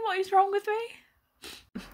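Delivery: crying, very high-pitched, very slow and drawn out. Watching a long distance relationship movie, crying while talking. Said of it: "I'm genuinely crying".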